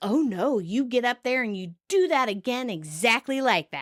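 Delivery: half-hearted, unconvincing sarcastic tone. Retelling a TV scene, quoting the director: imitating sarcastic director. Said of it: "the director sarcastically".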